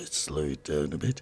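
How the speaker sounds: very low, hushed late-night radio DJ voice. Introducing the next songs to listeners, saying it in a DJ voice. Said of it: "as they say in DJ voices".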